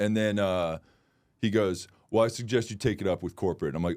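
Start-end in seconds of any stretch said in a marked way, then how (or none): 2.1-3.7 sassy put-on voice. Retelling a reply from a man on a flight: imitating someone being sassy.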